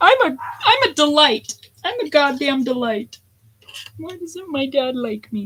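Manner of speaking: high, indignant protest. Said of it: "I'm like".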